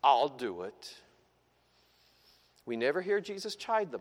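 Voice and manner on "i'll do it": begrudging, grudging, reluctant tone. Speaker demonstrates the tone people use when agreeing to do something, grudging tone. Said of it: "Ever said that with that tone of voice?".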